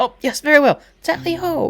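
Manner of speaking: very high, squeaky character voice. Voicing Tibbs agreeing to go up the stairs first: voicing the character Tibbs. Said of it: "He goes".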